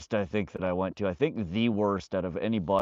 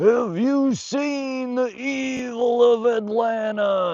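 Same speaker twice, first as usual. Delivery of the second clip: very high, very slow, loud ranting scream; 7 dB louder than usual. Retelling a man standing on a milk crate, imitating him screaming. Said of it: "screaming at the top of his lungs".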